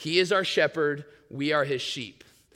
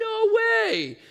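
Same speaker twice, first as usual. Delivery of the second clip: much higher, astonished voice. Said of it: "I'm always surprised".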